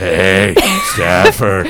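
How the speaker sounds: creepy, smooth, deep, loud microphone voice. Joking about fans approaching a co-host at events, creepy fan in mic voice. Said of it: "Do they talk to you in that mic voice?".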